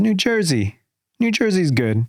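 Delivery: simple broken-English phrasing. Retelling how mom suddenly spoke english by the fire: imitating broken english. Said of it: "breaking out in broken English".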